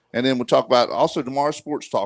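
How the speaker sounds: ordinary delivery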